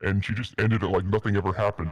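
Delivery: ordinary delivery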